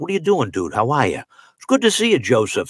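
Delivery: put-on Boston accent, swooping and sing-song. Imitating how the guys in boston talked: boston guys' accent. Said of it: "they all talk like this".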